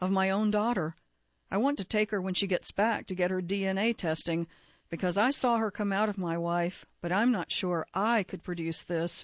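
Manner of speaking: normal talking voice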